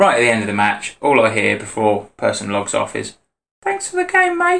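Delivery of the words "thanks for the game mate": put-on very high, tiny little boy voice. Retelling what the losing opponent said at the end: imitating a little kid. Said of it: "Sounded like a little kid".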